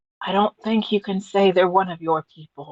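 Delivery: loud stage whisper. Speaking in character, leaning over to another character: stage whisper. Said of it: "Sage whisper".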